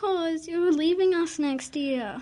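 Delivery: crying voice. Asked on the radio why they're crying, answering a friend who leaves next year, crying. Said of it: "why on earth are you crying?".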